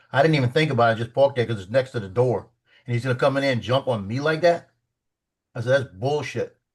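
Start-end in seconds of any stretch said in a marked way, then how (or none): 5.9-6.5 put-on straight-out blunt tone. Retelling his own complaint to the master sergeant: retelling his own blunt complaint. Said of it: "that's how I said it to the master sergeant".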